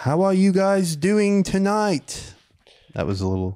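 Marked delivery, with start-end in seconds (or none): 0.0-2.3 fake British accent, very high-pitched. Pretending to greet a crowd at the Kimmel Center: put-on British accent. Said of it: "I keep throwing a British".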